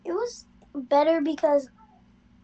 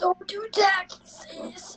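high, slow, drawn-out mock old man voice. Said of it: "It sound like that?".

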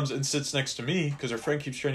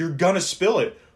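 raised-voice yelling; 4 semitones higher, 7 dB louder than usual. Retelling how Bert yelled at a girl tilting her wine cup, retelling a yell. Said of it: "he's yelling at her at this point".

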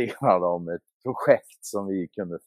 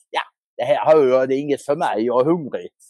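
Skåne dialect of Swedish; 7 semitones higher, 6 dB louder than usual. Retelling how Marcus stood up during an argument over money: imitating Marcus's Scanian accent. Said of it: "säger på sin goda skånska".

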